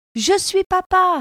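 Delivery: bursting with pride, cried out. Monsieur Lapin answers the mouse's question: proud exclamation. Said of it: "s'écria Monsieur Lapin, fier comme un paon".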